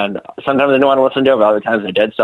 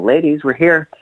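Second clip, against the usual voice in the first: mock meek, sheepish little voice, pitched up; 7 semitones higher than usual. Retelling turning around to the arguing women on arrival, imitating own sheepish tone. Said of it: "sheepishly go".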